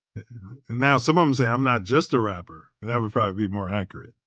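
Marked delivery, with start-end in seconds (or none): none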